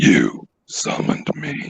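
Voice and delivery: frightening demonic voice. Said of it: "That's a frightening voice".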